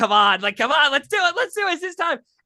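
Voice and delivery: put-on very high, rushed, bouncing excited eagerness. Retelling how Nicholas Zednick urged the pick: imitating an excited Nicholas Zednick. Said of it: "jumping around like a crazy lunatic".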